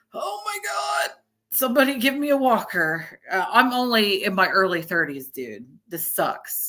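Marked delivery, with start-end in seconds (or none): 0.2-3.2 mock sore, creaky eighty-year-old voice, pitched up. Describing getting up with lower back pain in their early thirties: acting out back pain. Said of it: "You're like".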